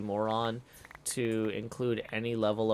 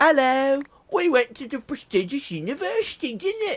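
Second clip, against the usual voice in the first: very high-pitched, loud, put-on Swedish accent; 7 dB louder than usual. Imagining what a contact would say: Swedish accent. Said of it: "Except like with a Swedish accent".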